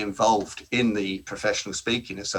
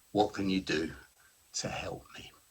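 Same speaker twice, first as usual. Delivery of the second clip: dropped-down, soft, breathy, hushed near-whisper; 7 dB quieter than usual. Demonstrating a plea in a keynote on negotiation: dropped tone of voice. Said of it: "just drop your tone of voice".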